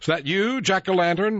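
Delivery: cheerful calling out. Narrator in a story, seeing a blinking light in the fog, jovial call. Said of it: "I called jovially".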